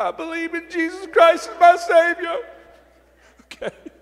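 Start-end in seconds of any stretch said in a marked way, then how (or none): 0.0-2.4 mock trembling, shaky voice, very high-pitched. Retelling a beaten bully's forced answer: imitating a shaky voice. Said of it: "with a shaky voice".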